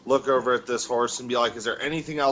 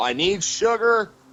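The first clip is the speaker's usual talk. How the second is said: high-pitched, loud yell; 8 semitones higher, 4 dB louder than usual. In a role-play scene, looking around and yelling. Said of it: "I'm gonna yell".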